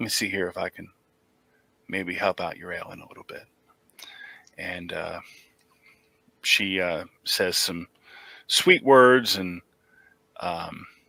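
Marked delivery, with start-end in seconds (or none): 0.0-3.4 gentle, soothing coo, quiet and quick. Retelling a story, speaker quotes a woman offering to help, in a quiet cooing voice. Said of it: "in sort of a quiet, cooing voice".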